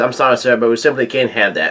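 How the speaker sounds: normal talking voice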